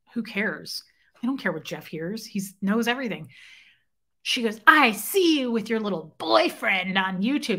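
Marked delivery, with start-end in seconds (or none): 4.6-7.6 fairy-tale witch voice. Retelling what a woman said to her: Wicked Witch of the West voice. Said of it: "It sounded like the Wicked Witch of the West".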